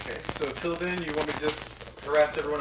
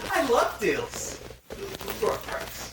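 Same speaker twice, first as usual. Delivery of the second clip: high-pitched put-on little imp voice; 8 semitones higher than usual. An imp bargains with a stranger over a price, in an imp character voice. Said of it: "It's an imp inside. The imp is the one they said on our ribs".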